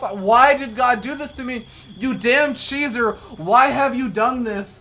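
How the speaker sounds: raging, angry, screamed, yelled rant. Casting a game, pretending a player curses himself: pretend screaming as a player. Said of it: "pretend like he's screaming this".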